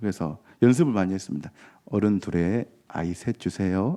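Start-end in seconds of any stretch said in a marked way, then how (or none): 1.8-4.0 put-on gentle, slow, rehearsed-sounding Seoul standard accent. Dialect speaker who practiced to avoid dialect buys tickets: soft practiced Seoul accent. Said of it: "이렇게 서울 사람 같지 않습니까?".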